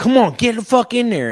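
mock shrill yelling, very high pitch. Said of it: "Wayne goes".

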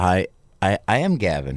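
ordinary talk

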